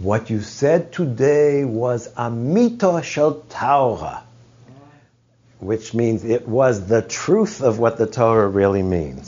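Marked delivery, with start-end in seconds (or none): 0.0-4.2 put-on German accent, spoken slowly. Retelling a professor's compliment after his talk: German accent as Alexander Altmann. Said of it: "with his German accent".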